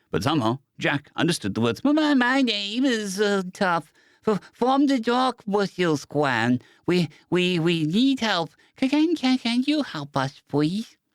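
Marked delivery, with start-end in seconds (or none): 1.8-10.9 tiny, very high, squeaky critter voice. A small dark-furred leader creature speaks up to Jack, high-pitched and squeaky. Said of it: "Its high-pitched, squeaky voice".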